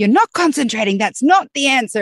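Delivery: frustrated scolding.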